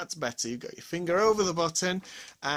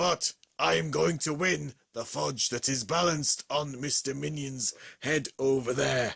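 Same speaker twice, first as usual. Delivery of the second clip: sore-throated, hoarse voice, pitched much lower; 4 semitones lower than usual. Announcing the winner, the speaker voices Missus Ramsey Bear: Ramsey Bear voice, sore throat. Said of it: "I have a very, very sore throat".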